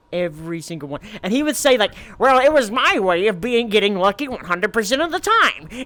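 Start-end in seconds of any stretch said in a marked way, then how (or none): 2.1-5.6 loud, belted cartoon-villain voice. Imitating how a friend would sound bragging: Skeletor-like voice. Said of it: "I just imagine it's Skeletor now".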